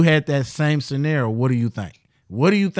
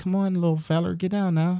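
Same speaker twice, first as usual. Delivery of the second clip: put-on voice, higher and quieter; 4 semitones higher, 5 dB quieter than usual.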